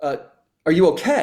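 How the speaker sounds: acted, high-pitched shout as if from a distance. Retelling a man on the beach checking in: imitating a man yelling. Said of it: "he yells and he says".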